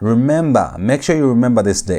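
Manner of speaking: ordinary delivery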